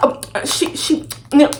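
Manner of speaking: whispered, slow, breathy, broken stutter. Retelling how the other person answered when confronted: imitating someone stuttering. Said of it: "Then he started stuttering".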